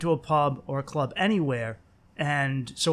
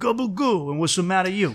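put-on Italian-American accent, higher; 4 semitones higher, 3 dB louder than usual. Joking about how Mario could have talked, in a Mario Italian-American accent. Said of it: "A little bit of that Italian-American accent".

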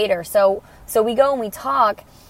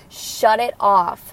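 ordinary talk, nothing marked

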